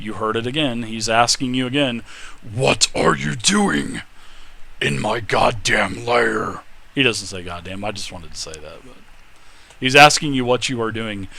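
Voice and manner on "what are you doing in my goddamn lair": slow, deliberate, drawn-out dragon voice. Narrating as a door opens, voicing the lair's owner: thunderous voice. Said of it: "a thunderous voice".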